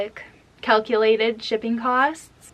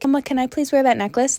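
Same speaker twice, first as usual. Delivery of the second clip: put-on mimicked polite toddler voice, higher; 3 semitones higher than usual. Retelling how a toddler asks for a necklace: imitating a toddler asking nicely. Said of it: "she'd be like".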